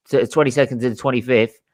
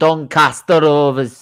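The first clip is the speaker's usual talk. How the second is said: put-on Northern English accent. Reading out numbered teams in a draw, announcing one in a put-on Northern accent. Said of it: "Don't know why I said it in that voice".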